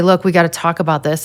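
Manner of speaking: ordinary talk, nothing marked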